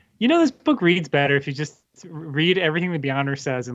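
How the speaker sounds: usual speaking voice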